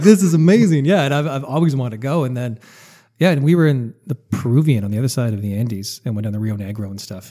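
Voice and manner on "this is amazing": high, loud, amazed voice. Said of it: "And you're like".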